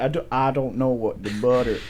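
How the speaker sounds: put-on South Carolina Southern US accent. Retelling what a woman said when asked to pass the butter, South Carolina accent. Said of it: "South Carolina accent".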